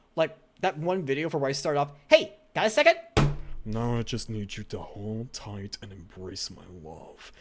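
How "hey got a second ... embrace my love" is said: low, swooping, commanding, dominant voice. Recreating the start of one of his videos, imitating a Dom voice. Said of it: "made a one eighty to sound like a Dom".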